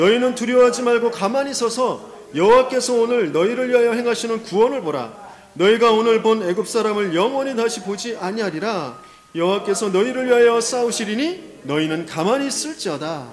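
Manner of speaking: crying out loudly.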